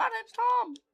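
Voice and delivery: high, swooping, pitch swinging cartoon-cat voice. Joking about a movie, doing a Talking Tom impression. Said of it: "that was my talking Tom impression".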